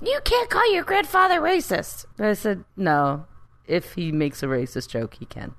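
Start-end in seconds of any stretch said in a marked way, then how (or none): 0.0-2.0 very high, loud-sounding scolding yell. Retelling the speaker's mom scolding the speaker's son: retelling mom's yelling. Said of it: "my mom starts yelling at my son".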